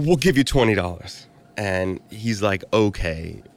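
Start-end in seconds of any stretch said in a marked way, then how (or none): 0.0-1.2 high-pitched, blurted out on the spot. Retelling how the speaker answered a man's question about payment, blurting it out. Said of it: "I just blurted out".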